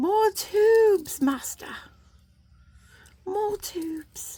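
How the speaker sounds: squeaky, very high, small voice. While crimping tubes, the speaker breaks into a Dobby impression. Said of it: "That was my impersonation of Dobby".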